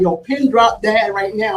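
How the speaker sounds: plain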